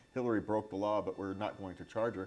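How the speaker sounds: normal talking voice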